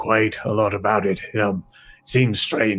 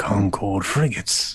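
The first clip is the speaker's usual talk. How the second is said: quiet, hushed voice. Voicing a character telling a visitor who just flew in: quiet voice. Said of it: "he says this in a quiet voice".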